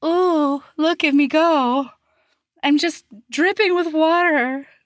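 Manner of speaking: mock coy, flirty, high, showing-off voice. Retelling how a woman teased the speaker to watch her: imitating her coy act. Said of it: "she does this coy little like".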